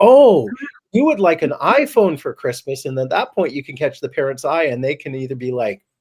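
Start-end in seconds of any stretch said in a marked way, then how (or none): 0.0-2.9 put-on loud, very high, hearty old-man voice. Showing how to repeat a wish back so the parent hears, loud Santa voice. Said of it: "repeat it loudly in Santa's voice".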